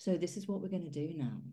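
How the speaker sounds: soft, calm late-night radio DJ voice, falling endings. Demonstrating a classroom de-escalation technique to a former fellow teacher, calm late-night DJ voice. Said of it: "late night D J voice".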